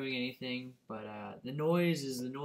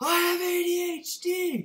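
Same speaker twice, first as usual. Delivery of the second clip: all-out yell, very high and very loud; 9 dB louder than usual. Speaker retelling how he repeated his line louder when asked, imitating a louder shout. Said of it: "Then I say it louder".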